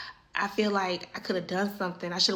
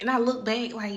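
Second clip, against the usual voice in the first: ordinary talk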